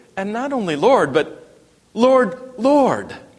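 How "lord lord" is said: high, eager crowd calling out twice. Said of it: "they called him".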